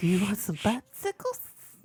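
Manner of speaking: high, wheezy put-on voice. Joking with friends about Family Guy, imitating Herbert: Herbert voice. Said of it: "Herbert, like Herbert".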